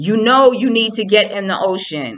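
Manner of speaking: loud yelled out, high pitch. Retelling an older man on the beach telling her to get in: imitating a man yelling. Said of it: "he's yelling".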